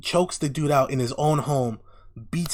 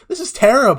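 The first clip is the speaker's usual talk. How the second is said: mock laughing through words, very loud, high; 7 semitones higher, 8 dB louder than usual. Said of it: "she starts laughing".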